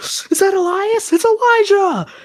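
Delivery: put-on very high, stretched-out, thrilled shriek. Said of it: "And I start screaming".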